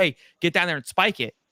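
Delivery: acted-out, loud yelling. Retelling what was yelled at the game as it happened: imitating own yelling. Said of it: "I'm yelling at it as it's happening".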